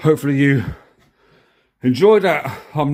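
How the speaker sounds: breathless, out-of-breath voice. Speaker, knackered after a result, out of breath. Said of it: "I'm out of breath".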